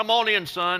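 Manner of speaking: put-on southern drawl. Retelling how an older gentleman behind a counter greeted him, southern drawl. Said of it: "with his southern drawl said".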